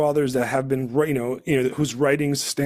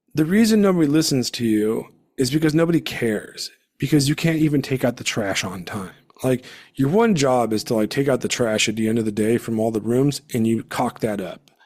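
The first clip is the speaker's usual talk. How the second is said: ordinary talk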